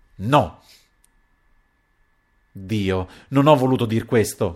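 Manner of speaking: sudden loud cry. A woman at a table answers the count, crying out. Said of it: "gridò Silla".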